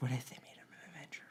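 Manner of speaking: very soft, breathy, barely audible whisper. Asking the other person a question, in a very soft whisper. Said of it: "You whispered that so softly to me".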